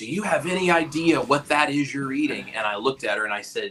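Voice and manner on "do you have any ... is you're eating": high-pitched, furious, angry voice. Retelling a vegan girl confronting the speaker over a cheeseburger in the cafeteria: mock-angry accusing. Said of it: "in a very angry way was like".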